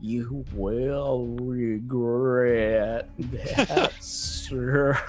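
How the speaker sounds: very slow, deliberate, drawn out word by word. After being slapped, Claire answers the man who hit her, very slowly. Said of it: "she says really slowly".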